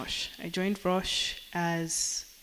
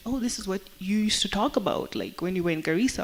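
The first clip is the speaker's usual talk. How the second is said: ordinary talk, nothing marked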